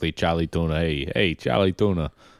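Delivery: New England pronunciation. Showing how a name sounds in their own accent: new england accent. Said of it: "our kind of New England accent perfectly".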